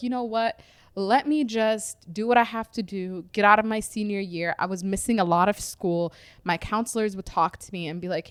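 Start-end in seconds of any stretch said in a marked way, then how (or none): none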